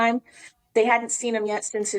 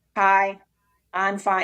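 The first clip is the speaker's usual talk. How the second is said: fake robotic man's voice. Recounting a man's greeting after throat surgery, Mike's robotic voice. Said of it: "talking like a robot".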